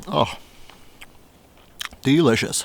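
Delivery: speaking through full mouth. Eating chicken tandoori while talking to viewers: talking with mouth full. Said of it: "Talk with my mouth full".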